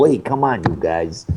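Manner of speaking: very deep, worst, bad New York accent. Recalling everyone playing mafia goons, doing the worst new york accent. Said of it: "Everyone's doing the worst New York accent they got".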